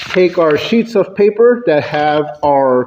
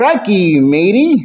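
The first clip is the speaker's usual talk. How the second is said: slight Australian accent in a dwarf voice; 3 semitones higher than usual. Showing off the voice of an adventurous dwarf character, slight Australian accent. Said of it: "he would talk with a little bit of a Australian accent".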